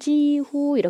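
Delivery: jihu with high level tone on both syllables. Teaching Korean learners a Chinese word, saying jihu in first tone. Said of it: "이렇게 일성일성 읽어줍니다".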